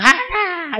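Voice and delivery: mock high, calling-out cry.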